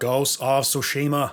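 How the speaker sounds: put-on gruff voice with Boston accent. Asked by a friend to say a game's name, in JFK voice. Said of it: "J F K voice".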